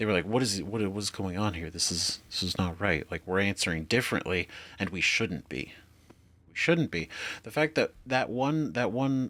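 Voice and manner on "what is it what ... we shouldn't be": usual speaking voice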